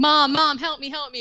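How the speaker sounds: mock all-out screaming, shrill and loud. Retelling a movie scene of a call for help: imitating someone screaming. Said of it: "screaming, like".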